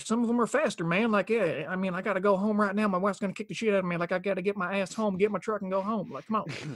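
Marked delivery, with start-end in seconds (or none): 1.9-6.8 put-on Southern drawl, higher pitch. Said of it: "different kinds of, of Southern accents".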